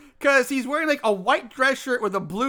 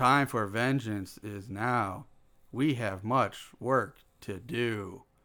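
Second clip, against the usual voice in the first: slow, flat monotone with no emotion; 14 semitones lower, 8 dB quieter than usual. Imitating Harold's line from the movie: Harold's emotionless voice. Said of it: "lack of any kind of human emotion whatsoever".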